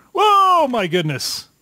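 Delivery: cartoon-style high, loud falling yell. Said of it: "the way your voice sounded to me, you sounded like Wile E. Coyote falling off a cliff".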